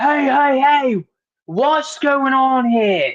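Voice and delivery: put-on Australian accent, pitched very high. Recapping the scene where three women storm in on Finn: Finn impression, Australian accent. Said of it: "He turned Australian for a minute".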